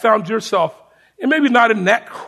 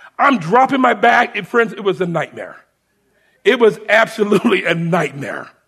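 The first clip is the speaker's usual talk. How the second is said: plain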